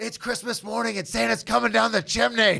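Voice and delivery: pumped-up, high, rough-edged hyped screaming. Recalling playing middle linebacker, screaming at a player: retelling his own scream. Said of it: "I'm screaming at him as the middle linebacker".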